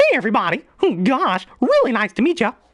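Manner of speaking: pitch jumps way up and bounces around. Demonstrating his high-pitched voices, doing a Mickey Mouse voice. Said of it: "when I do a high pitched voice, like say Mickey Mouse".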